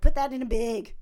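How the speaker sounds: put-on loud Wisconsin accent with vowels pulled back. Retelling coming back from a weekend home: imitating own Wisconsin accent. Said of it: "I spend a weekend at home in, in Wisconsin".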